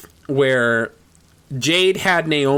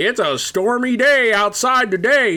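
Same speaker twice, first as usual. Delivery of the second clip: put-on slow, pitched-up old-man narrator voice; 9 semitones higher than usual. Mocking a wrestling entrance intro, imitating a random old dude. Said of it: "some random old dude outside being like".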